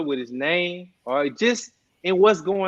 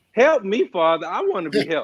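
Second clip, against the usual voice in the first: acted-out tearful crying voice, swooping pitch. Retelling asking Father for help while crying: retelling own crying plea. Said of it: "And I'm crying".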